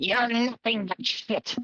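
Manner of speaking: goblin-like voice. Voicing a resigned goblin insulting the party: goblin voice speaking broken Common. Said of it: "He speaks very broken common".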